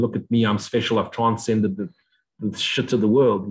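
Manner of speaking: ordinary delivery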